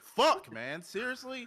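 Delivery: loud, shrill, high-pitched, exasperated, frustrated scream. Complaining about being called in to work early: frustrated scream. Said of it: "I didn't mean to scream you guys' ear".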